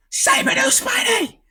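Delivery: put-on very high, frantic child's screaming. Retelling a son demanding something: imitating a child screaming. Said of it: "He's just screaming".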